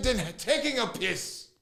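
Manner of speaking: heavy Irish brogue, laid on thick. Retelling what a man said to him, in a thick Irish accent. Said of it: "he had a thick Irish accent".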